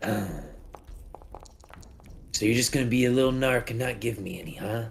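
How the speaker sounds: muskrat critter character voice. In an actual play, the narrator voices a frowning muskrat: talking muskrat character voice. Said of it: "And you see the muskrat kind of inhale deeply, and he goes, "Ooh, yeah, that's the good stuff. That's the good stuff. Ooh, you can really, you can kind of, ooh, you can taste the the ingredients, can't you?" As".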